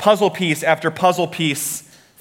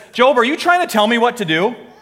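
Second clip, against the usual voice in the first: play-acted, a little snarky, needling tone; 7 semitones higher than usual. Retelling God's reply to the suffering Job: snarky God voice. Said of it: "God gets a little snarky here".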